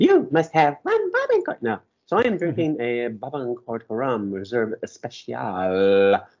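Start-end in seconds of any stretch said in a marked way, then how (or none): 0.0-1.6 shrill, very high, annoying synthetic female AI voice. Trying to imitate the AI voice on many TikToks, high-pitched annoying TikTok AI voice. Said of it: "I'm going to try to do the high pitched annoying female voice, the AI thing".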